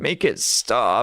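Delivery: slow, drawn-out fake whiny voice, mocking.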